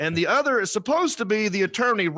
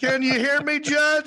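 acted, flustered, frantic, high-pitched panicked voice; 7 semitones higher than usual. Retelling a lawyer's reply to a judge: imitating a panicked man. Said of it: "you can tell he's so panicked".

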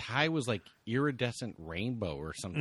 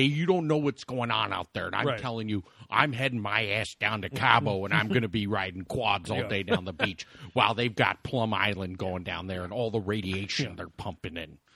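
put-on flat, blunt delivery; 3 semitones lower, 4 dB louder than usual. Retelling what Jesse Ventura always says on Howard Stern: Jesse Ventura impression. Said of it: "a good impression".

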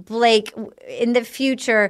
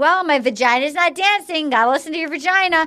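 in a woman's voice; 4 semitones higher than usual. Retelling what a woman keeps saying: imitating a woman. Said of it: "she keeps being like".

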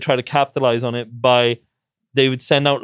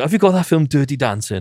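put-on Welsh accent, higher; 7 semitones higher than usual. Telling a story about a newlywed woman asking a man something in a van, the speaker imitates her in a Welsh accent. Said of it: "Very sort of Welsh accent".

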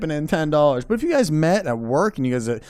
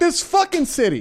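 mock exasperated, very high-pitched, fed-up angry griping; 12 semitones higher than usual. Retelling own complaint after hitting an unfixed pothole: imitating own angry complaint. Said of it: "I get mad at that".

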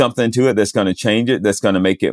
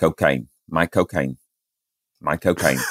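put-on English accent, lower pitch, quieter; 4 semitones lower, 5 dB quieter than usual. After being taught two words, the speaker tries a Michael Caine impersonation. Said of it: "pretty good Michael Caine impersonation".

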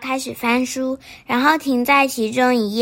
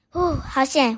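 usual speaking voice

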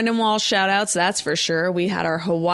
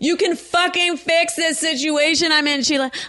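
mock yelling, higher; 8 semitones higher than usual. Acting out an angry caller on the phone, imitating someone yelling. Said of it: "please don't yell".

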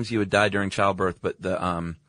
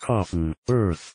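put-on robotic computer voice. Rather than saying a term himself, speaker has the computer say it: computer voice impression. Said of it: "That was a good computer impression".

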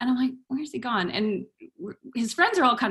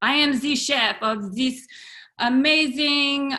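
clumsy, bad, fake put-on French accent; 3 semitones higher than usual. Quoting a French customer at the pub, in a bad French accent. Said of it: "sorry for my French accent".

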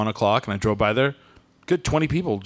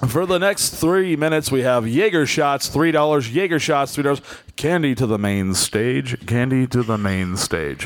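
hyped club DJ announcer patter. Asked to do the strip club DJ one, announcing specials in a strip club DJ voice. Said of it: "strip club DJ voice".

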